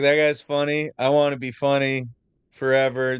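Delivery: ordinary delivery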